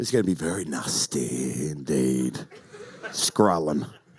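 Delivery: very deep, low put-on voice. Teasing something coming out in March, in a deep put-on voice. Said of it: "(IN DEEP VOICE)".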